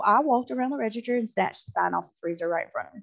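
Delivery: normal talking voice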